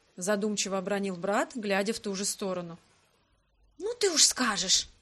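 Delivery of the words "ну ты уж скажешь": indignant, protesting tone in a stage whisper. Answering a brother's remark about a resemblance to a woman: indignant whisper. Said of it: "шепотом возмутилась я".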